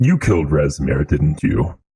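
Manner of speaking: flat, deadpan delivery. Voicing a character who looks thoughtfully at the listener, then asks, deadpan. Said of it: "kind of deadpan says".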